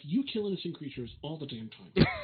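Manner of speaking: very low, quiet mutter under the breath. In a role-play game, muttering a retort to another character, under the breath. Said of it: "I'll say under my breath".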